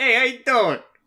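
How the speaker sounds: very loud, shrill, high, belted character shout. Imitating a cartoon character greeting viewers during ads: Joey Wheeler voice. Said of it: "Joey's just there, and he's just like".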